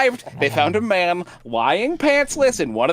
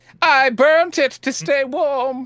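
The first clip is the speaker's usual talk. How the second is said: very slow, high put-on old woman voice; 8 semitones higher than usual. Asked to show the letter, answering in an old lady voice. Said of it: "making old lady voice".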